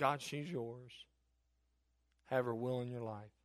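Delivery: put-on tearful, baby-like crying. Retelling one of the hardest prayers ever prayed, crying like a baby. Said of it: "crying like a baby".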